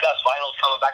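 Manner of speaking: ordinary talk, nothing marked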